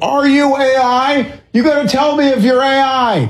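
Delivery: high shout. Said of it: "just shouting up".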